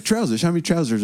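put-on English accent. Retelling what a man asked, the speaker repeats him in an english accent. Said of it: "He said that in the English accent".

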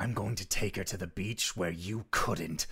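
put-on monster-man voice. Kefris rears up his spear and speaks in the most monster-man tone he can. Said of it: "in the most monster man tone that he can".

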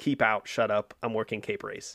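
ordinary delivery

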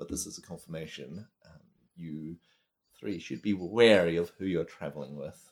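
hushed, quiet lich monster voice. Voicing the lich speaking inside three of the players' heads, lich voice. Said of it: "Do you hear the lich's voice".

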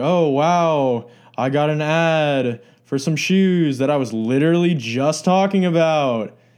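heavy, dripping sarcasm, drawn-out delivery. Speaker imitates what many people say, imitating sarcastic people. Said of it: "They'll say sarcastically".

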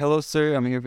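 put-on Indian-accented voice. Speaker retells a pizza delivery man's phone call, imitating an Indian accent. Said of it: "like with his accent".

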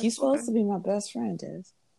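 genuinely disappointed, let-down, hurt tone. Finding out a friend loves football, speaking to Des: disappointed. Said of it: "You sounded so disappointed".

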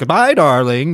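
quirky, kooky, playful tongue-in-cheek delivery. Retelling a movie scene between Nick and Nora: imitating Nick's kooky goodbye. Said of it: "just being, like, really kooky about it".

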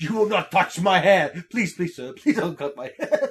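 loud, full-throated screaming. Retelling a movie scene where a character in a chair screams: imitating a character screaming. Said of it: "he's screaming".

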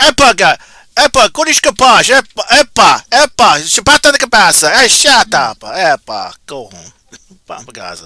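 fake Portuguese-sounding gibberish. Claiming to be half Portuguese, showing how he'd talk, mock Portuguese accent. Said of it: "That's Portuguese".

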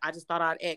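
mock snide, cutting, biting sarcasm. Retelling what a man said on the phone: imitating a biting sarcastic tone. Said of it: "But he said it with a bite".

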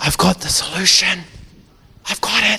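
soft, hushed, dramatic, secretive whisper. Acting out Jesus speaking to a dead man, whispered. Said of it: "He would have whispered it just like that".

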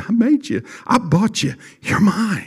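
quiet, soft, high half-whisper under the breath. Preaching, voicing the Spirit of God speaking: half-whispering. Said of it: "He whispers".

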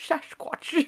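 hushed, whispered film-star voice. Saying a word in an unplanned Sean Connery voice. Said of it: "I turned into Sean Connery there".

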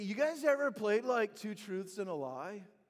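very loud, booming surfer dude style voice. Retelling what the group leader asked them: surfer dude voice. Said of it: "he's got like this surfer dude kind of voice".

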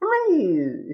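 high, strongly inflected voice. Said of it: "a Bane intonation to his voice".

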